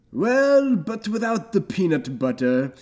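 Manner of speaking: put-on British accent. Imitating the other speaker's slip into a British accent: imitating someone's British accent. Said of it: "Then you went to".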